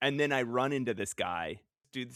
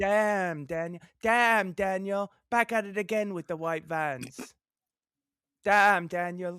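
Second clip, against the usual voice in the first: high-pitched voice like a little street orphan; 7 semitones higher than usual. Recalling the guy in a video and his really high voice, imitate him in a high voice like an orphan. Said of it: "You sound like an orphan".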